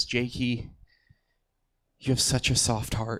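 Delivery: quiet, soft, hushed whisper. Retelling his mother's words during a goodbye hug, whispering. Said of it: "she whispers in my ear".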